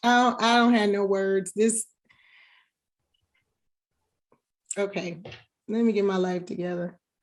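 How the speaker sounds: tearful, overwhelmed, choked up, words failing. Reacting to birthday wishes from co-hosts: on the verge of tears. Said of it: "Don't cry".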